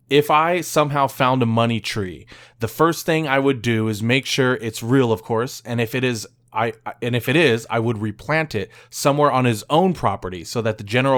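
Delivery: ordinary delivery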